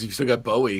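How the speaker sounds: normal talking voice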